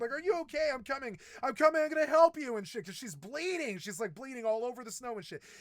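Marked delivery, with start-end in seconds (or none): 0.1-2.6 high-pitched, frantic screaming. Telling a story, the speaker re-enacts running to help someone bleeding, retelling a scream. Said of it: "I'm running and I'm screaming".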